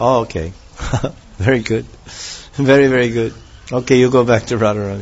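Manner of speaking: put-on laughing voice. Retelling how Krishna answers the Manjaris' refusal, acting out Krishna laughing. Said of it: "And Krishna laughs".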